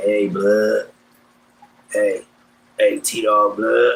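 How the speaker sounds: deep, low, slow voice. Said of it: "he got a deep ass voice".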